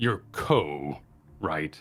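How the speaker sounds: low, deep-voiced. Game master voicing a dragonborn addressing the player's character, in a deep voice. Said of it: "And in a deep voice".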